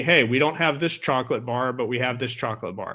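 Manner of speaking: usual speaking voice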